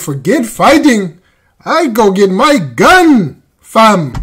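put-on Canadian accent. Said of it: "He said".

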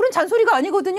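indignant, high-pitched, fast outburst.

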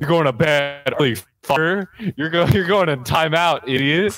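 high-pitched, berating, scolding cop voice. Acting out cops scolding a caught shoplifter: playing cops scolding a shoplifter. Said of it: "and they're like".

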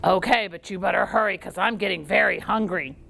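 big, mean, menacing troll voice. Reading a story aloud, the troll answers Middle Billy Goat Gruff, big mean troll voice. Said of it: "They never did see that big old mean troll again. / They never did see that big old mean troll again".

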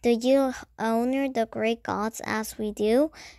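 ordinary delivery

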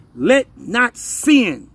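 slow, drawn-out reading pace. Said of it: "I'm gonna read it slowly".

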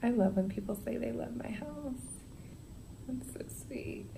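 whispered, very soft.

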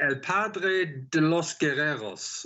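Spanish in put-on German accent. Reworking someone's social media tagline, the speaker tries it in spanish with a german accent. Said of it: "I'm saying that with a German accent".

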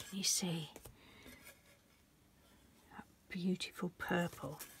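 soft whisper. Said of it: "Why am I whispering?".

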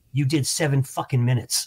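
whispered speech. Retelling what the act he opened for said to him: imitating someone whispering. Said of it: "He whispers in my ear".

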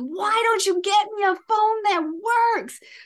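put-on kid's yell, high. Retelling a late drive to a swim meet as their 14-year-old yells at them; imitating the yelling. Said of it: "my 14-year-old starts yelling at me".

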